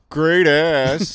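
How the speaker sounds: mocking, sarcastic tone. Asking whether anyone catcalls sarcastically, then demonstrating a sarcastic catcall. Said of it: "Does anyone sarcastically catcall?".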